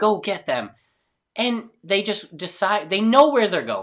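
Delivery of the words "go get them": mild, acted, scaled-down yelling witch voice. Retelling a film scene where the witch wakes her minions: imitating a witch screaming. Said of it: "is screaming at them".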